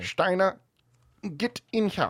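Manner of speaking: high, loud bellowing voice. Speaker imagines a man at his desk calling in a corporal: cop from Young Frankenstein voice. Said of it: "I picture this guy sounding like the cop from Young Frankenstein".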